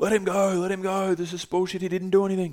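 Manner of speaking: put-on shouted in Portuguese accent, stretched "go". Retelling what Bruno, who runs the hostel, yelled out, in a Portuguese accent. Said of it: "That was my Portuguese accent".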